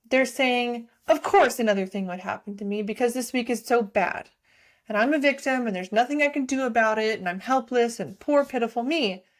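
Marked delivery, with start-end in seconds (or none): 1.0-9.1 play-acted self-pitying, defeated, woe-is-me tone. Acting out own thoughts during a bad week: imitating own self-pitying thoughts. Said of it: "my thoughts are throwing my hands up in the air and giving up".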